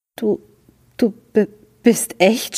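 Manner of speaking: high, faltering stammer over du. Narrator reads Fritz speaking to the tortoise, stammered. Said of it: "Stammelte er".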